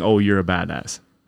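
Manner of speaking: insincere, sarcastic, falsely admiring delivery. Acting out what they say to a wannabe tough guy: imitating a sarcastic remark. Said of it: "We're sarcastically saying".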